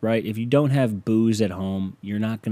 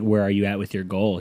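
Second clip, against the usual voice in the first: put-on smug tone. Retelling how someone asked about a weight goal: imitating someone smug. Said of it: "getting all smug".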